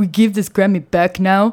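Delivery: thick, heavy, put-on German accent. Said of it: "Let me do my impression of [name] at that press conference. ... It's very [name]".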